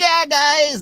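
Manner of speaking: shrill, blaring, very high and very loud. Imitating how Billy usually ends, imitating Billy's sign-off. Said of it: "But then he usually goes".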